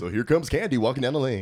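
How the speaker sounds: very loud, high, radio-style announcer voice. Describing how the strip club announces each dancer coming up; radio announcer voice. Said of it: "like super like radio voice".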